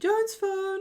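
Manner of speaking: very high, prim, piped-up voice.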